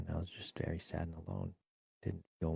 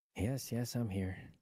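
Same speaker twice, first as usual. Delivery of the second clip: annoyed, put-upon tone with attitude, pitched up; 5 semitones higher than usual. Answering when asked if he's still there, with attitude. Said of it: "Why did he sound like he had attitude".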